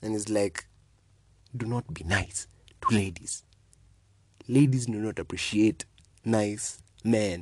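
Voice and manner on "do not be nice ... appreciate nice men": put-on male voice full of disappointment. Retelling what he said after nodding: imitating a disappointed man. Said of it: "he nods and said so disappointedly".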